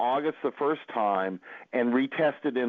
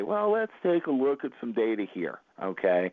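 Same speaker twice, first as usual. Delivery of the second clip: put-on, very calm voice. Quoting Walter answering a harebrained new indicator, imitating Walter's calm voice. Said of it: "Walter would very calmly say".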